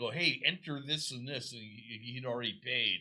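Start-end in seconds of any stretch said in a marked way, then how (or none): 0.1-1.5 acted-out calling out, as a yell. Retelling calling out to a friend while ordering: imitating own past yell. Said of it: "I yelled at my friend".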